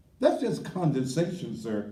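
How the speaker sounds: plain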